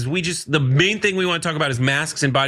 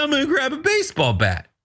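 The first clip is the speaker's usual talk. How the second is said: pedantic, verbose, lofty aristocratic delivery, pitched up; 10 semitones higher than usual. Mocking how a politician talks: imitating Hakeem Jeffries, pedantic aristocratic. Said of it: "He talks like that, and he's like".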